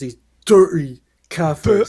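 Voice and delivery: loud, hateful, contemptuous, disgusted sneer. Repeating words another speaker said, imitating a disgusted tone. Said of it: "the disgust in his voice".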